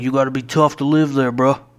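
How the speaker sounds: put-on New Jersey local accent. Retelling what a man who sounded like he was from new jersey said, new jersey accent. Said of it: "he kind of sounded like he was from New Jersey when he talked".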